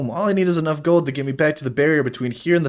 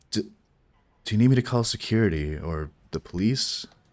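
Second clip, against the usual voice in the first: low, hushed, half-whispered delivery; 7 semitones lower, 6 dB quieter than usual. A character leans in close to the elf and half-whispers to him. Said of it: "He whispers to you".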